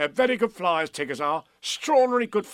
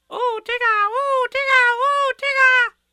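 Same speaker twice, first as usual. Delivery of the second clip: very high, loud, eager squeaking cry; 7 dB louder than usual. Roo calls out to Tigger before they climb the tree: excited squeak. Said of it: "squeaked Roo excitedly".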